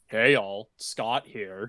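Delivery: slow, mechanical robot voice. Showing how the catchphrase should sound: robotic Scott the Woz voice. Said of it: "do it in the robotic voice".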